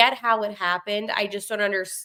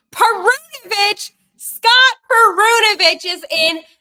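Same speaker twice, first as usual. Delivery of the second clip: very high, loud burst of a yell; 12 semitones higher, 10 dB louder than usual. Reading out the lineup, excited the player is in: yelling a name. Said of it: "Why did I just yell that so loud?".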